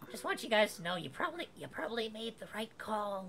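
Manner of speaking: squeaky little voice. A voice from somewhere in the bush calls out to the group, very squeaky voice. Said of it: "You hear a very squeaky voice coming out of somewhere in the bush".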